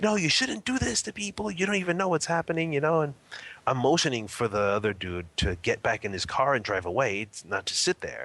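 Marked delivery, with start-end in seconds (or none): 0.0-3.0 put-on friendly, nice-toned yelling, very high. Recounting a man who kept yelling at another guy, imitating his friendly yell. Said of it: "now he's yelling at him in a nice way".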